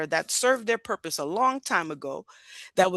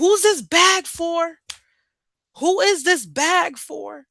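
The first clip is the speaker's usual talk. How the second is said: obnoxious, loud, slow, high, drawn-out hollering; 8 semitones higher, 6 dB louder than usual. Describing an airport security worker at the end of the line, imitating someone screaming. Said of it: "they're screaming".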